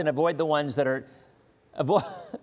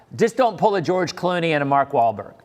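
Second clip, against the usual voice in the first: plain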